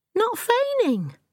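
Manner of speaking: very high, indignant, protesting tone. Accused of feigning innocence, the narrator protests indignantly. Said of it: "I say indignantly".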